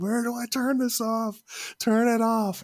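shrill, very high-pitched, loud yelling. Speaker recounting a man sprayed in the face by water, retelling a yell. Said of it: "he was just yelling".

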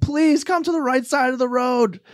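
put-on very high-pitched scream. Retelling shouting to a brother on bikes on the road: imitating own past scream. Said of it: "I was screaming at him".

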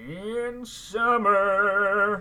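very loud, high-pitched, belted cartoon snowman voice. Introducing the day's topic, the speaker breaks into an Olaf impression. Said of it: "That was a uh, Olaf impression".

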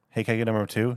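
plain

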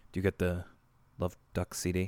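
low, very quiet, barely audible mumble. Recapping a scene, the speaker imitates Arthur mumbling to store workers. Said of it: "is like just mumbling".

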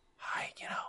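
soft, hushed, barely voiced whisper. Imitating a YouTube video of someone whispering, whispered hi. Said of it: "they're just talking in a whisper voice".

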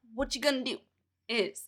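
bad fake put-on Italian accent. Katie, asked to tell the others about the drink, in a bad fake Italian accent. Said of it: "I can't do an Italian accent".

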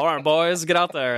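bad Scottish accent that barely lands. Speaker voices the Scottish government sending the boys out, in a bad Scottish accent. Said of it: "That's not even a Scottish accent".

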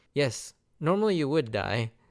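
matter-of-fact, unbothered, dry tone without fuss. Retelling an anime scene where Zoro survives a fall, imitating Robin's deadpan delivery. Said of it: "Robin's usual deadpan delivery is like".

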